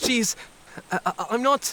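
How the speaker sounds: high, flustered stammering, tripping over the words. Caught off guard in a heated exchange, the character falters and cannot get the words out, stammering.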